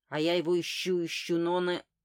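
plain

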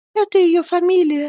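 faint, feeble, weak, very high-pitched voice. The mother answers Miss Betsey's question about the servant, in a weak voice. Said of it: "слабым голосом отозвалась матушка".

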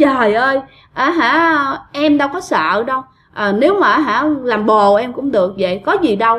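normal talking voice

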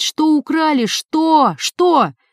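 high, drawn-out, repeated shouting. The master keeps shouting while his wife moans over the theft. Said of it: "продолжал кричать".

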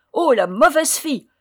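loud, high cried-out exclamation. Narrator reading the fifth of several dwarfs speaking in turn, crying out. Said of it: "cria le cinquième".

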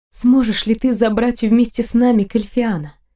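usual speaking voice

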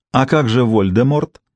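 ordinary delivery, nothing marked

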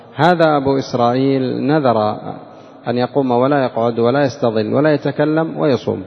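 normal talking voice

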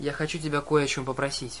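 ordinary delivery

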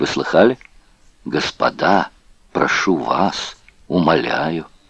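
hushed whisper. A prisoner speaks to fellow prisoners as others pass by; whispered. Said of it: "прошептал Гольдштейн".

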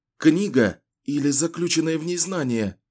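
fearful, frightened, high-pitched. Richard, being questioned through bursts of pain, asks back; asking fearfully. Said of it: "испуганно переспросил Ричард".

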